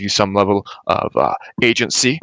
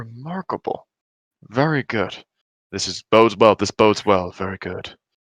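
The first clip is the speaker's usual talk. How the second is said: slow, self-satisfied murmur under the breath. A character speaking only to themself while watching her; murmuring to oneself. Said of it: "I'll just kind of like murmur to myself".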